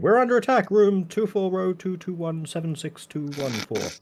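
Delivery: very high, booming, amplified loud shout. Voicing a character warning everyone of an attack: magically amplified loud voice. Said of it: "I will make my voice louder".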